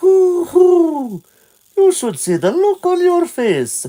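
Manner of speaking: very high hooting owl voice, stretched hoo. Reading game dialogue aloud, the owl speaks to a surprised Link; Kaepora Gaebora owl voice. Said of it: "This voice of Kepora Kepora".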